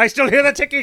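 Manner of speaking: very high, very loud, shrill, booming character voice. Acting out a pirate scene from a movie: Bob Hoskins Mario impression.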